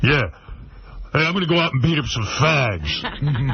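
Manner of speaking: over-the-top, super macho manly voice. Imagining a conversation after the change, in a super macho Chaz voice. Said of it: "super macho".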